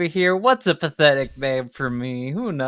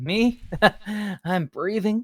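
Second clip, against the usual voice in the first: smug, sly, coy tone, pitched up; 5 semitones higher, 4 dB quieter than usual. Joking about what one does on weekends, answering with a put-on sly smiling delivery. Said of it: "give 'em a sly little smile and say".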